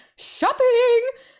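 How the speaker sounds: sudden, very high, loud blurted shout. Retelling being handed the phone and blurting an answer: imitating own blurted shout. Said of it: "And I said it literally just like that".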